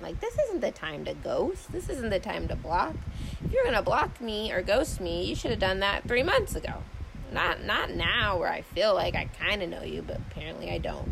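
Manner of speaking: ordinary talk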